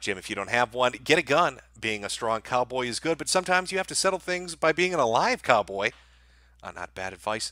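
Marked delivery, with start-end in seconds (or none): none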